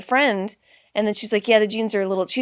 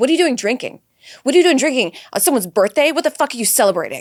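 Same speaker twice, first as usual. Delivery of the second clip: mock harsh voice, louder; 3 semitones higher, 5 dB louder than usual. Retelling what a fitness influencer said about drinking: imitating a mean fitness influencer. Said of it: "a lot of fitness influencers I find are just kind of mean".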